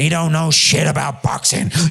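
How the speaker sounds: high, rough, angry ranting voice. Speaker impersonates someone from a boxing interview, impersonating an angry red-faced rant. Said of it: "That's a good impersonation".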